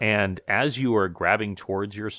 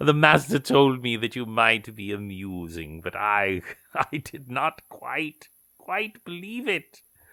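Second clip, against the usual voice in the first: amused, laughing, mocking put-on creature voice; 3 semitones higher than usual. Retelling what the laughing creature said to them, voicing the laughing creature. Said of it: "It goes".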